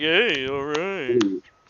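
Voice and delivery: put-on ironic cheer, like a sarcastic crowd. Imitating the crowd applauding their team: imitating a sarcastic cheer. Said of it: "Might be a sarcastic".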